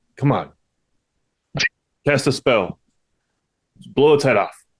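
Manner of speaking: in-character encouraging tone. Speaking in character, urging Becky to cast a spell: encouraging, in character. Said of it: "He's trying to be encouraging".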